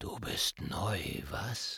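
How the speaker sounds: very slow, very soft, hushed whisper. Narrator reads the flugelhorn speaking to the new saxophone, whispered. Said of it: "flüsterte das Flügelhorn".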